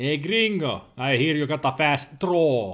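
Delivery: awful, terrible put-on Spanish accent. Voicing a character's line, in an awful spanish accent. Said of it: "my Spanish accent is awful".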